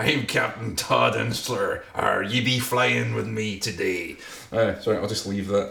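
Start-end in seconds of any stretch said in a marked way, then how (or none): 0.0-4.2 rough voice with a touch of pirate. A pilot introducing himself to passengers, trying again: a bit piratey. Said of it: "I sounded a bit piratey there".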